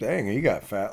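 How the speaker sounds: wry, sarcastic, jabbing tone. Retelling a comment at a concert: retelling a sarcastic remark. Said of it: "I said it sarcastically".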